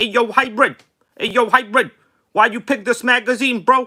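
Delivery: high voice shouting out. Pretending to be a viewer asking why this magazine was picked: imitating Rinks. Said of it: "I'll pretend I'm Rinks over here".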